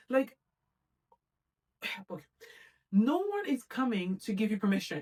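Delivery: fed-up, exasperated, frustrated outburst. Podcast host speaking to listeners; frustrated. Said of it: "I know I sound so frustrated".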